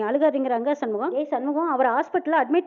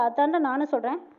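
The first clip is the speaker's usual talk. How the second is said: usual speaking voice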